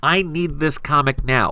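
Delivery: ordinary delivery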